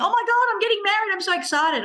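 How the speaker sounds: boastful bragging tone. Acting out a client talking about a wedding: imitating someone bragging. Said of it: "I'm bragging".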